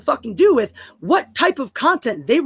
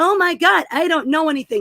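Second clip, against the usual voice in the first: mock airhead voice, ditzy and girly; 3 semitones higher than usual. Ranting at Tom, the speaker mocks a dumb blonde bimbo on YouTube. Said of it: "some dumb blonde bimbo tootling around on YouTube going".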